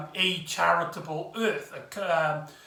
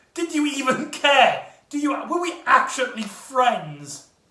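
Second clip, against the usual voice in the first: acted-out high, raised shouted outburst; 7 semitones higher, 3 dB louder than usual. Retelling a quarrel scene, the character's line: imitating someone shouting. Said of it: "Ace even, like, shouts".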